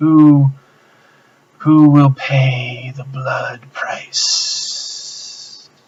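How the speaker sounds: hissing voice. Voicing the thing that speaks to the players, in a hissing voice. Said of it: "it says it in a hissing voice".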